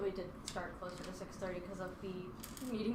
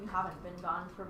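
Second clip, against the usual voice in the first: ordinary talk, nothing marked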